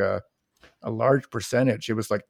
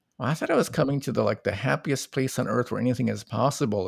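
ordinary delivery

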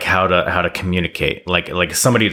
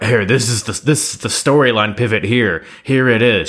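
over-the-top, overacted announcing with mock screaming; 4 semitones higher than usual. Describing a wrestler on screen, imitating someone screaming. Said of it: "she's just screaming at him, like".

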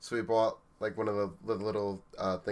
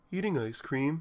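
sweet, innocent, guileless, pitched-up voice; 6 semitones higher than usual. Retelling an answer to a police officer's question: imitating an innocent tone. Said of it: "so innocently just look up to him and go".

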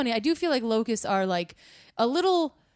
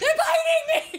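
put-on screaming, higher. Retelling running down a beach bitten by flies: imitating own past screaming. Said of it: "Were you screaming, "Flies"?".

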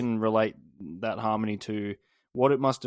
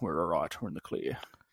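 put-on Scottish accent, lower and quieter; 6 semitones lower, 7 dB quieter than usual. Acting out the gibberish lyrics as a film line: Sean Connery voice. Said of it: "that sounds like what Sean Connery sounds like".

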